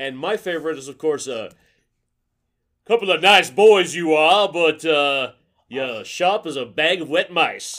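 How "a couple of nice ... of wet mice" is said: old-style cartoon rooster character voice. Quoting a favorite line from the old Warner Brothers shorts: Foghorn Leghorn voice. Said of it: "Foghorn Leghorn".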